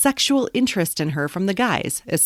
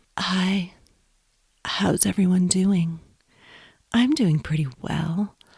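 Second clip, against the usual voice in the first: put-on, would-be seductive sexy voice. Greeting podcast listeners at the start of the episode: put-on sexy voice. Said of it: "That was my attempt at a sexy voice".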